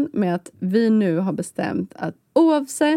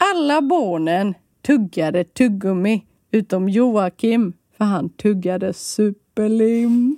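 performed Gothenburg Swedish dialect. Reading a listener's joke aloud on the show, in a put-on Gothenburg accent. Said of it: "Jag kör på göteborgska".

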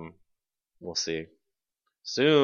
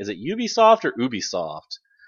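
ordinary talk

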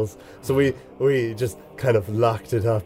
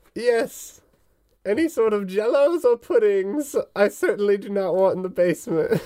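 put-on very high old witch voice; 10 semitones higher than usual. Voicing a plump old woman character in a tabletop game: old lady voice. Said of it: "Where she's like a straight up plump, rounded old woman. She's got warts and stuff. / Where she's like a straight up plump, rounded old woman. She's got warts and stuff. / It was old lady voice. / (op".

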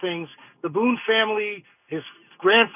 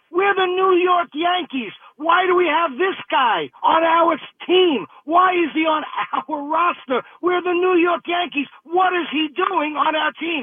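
put-on high, screamed voice; 8 semitones higher than usual. Retelling what he screamed toward the dugout for an inning: retelling his own screaming. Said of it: "I was screaming for an inning or two".

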